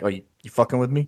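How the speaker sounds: chuckling, laughing, half-amused menace. Voicing a bigger dragonborn customer who chuckles at the player: chuckling threat. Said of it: "he kinda chuckles. He's like".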